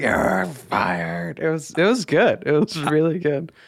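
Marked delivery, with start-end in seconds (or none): 0.0-1.4 put-on toddler voice, deep and bassy. Recalling a two-year-old's line from a visit, imitating her bassy toddler voice. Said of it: "the bass that she was able to get in her little 2-year-old voice".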